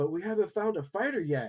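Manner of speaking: small, high, piping little voice. Narrating a story, someone at the back of the entourage speaks up: small voice. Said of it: "you hear a small voice come up".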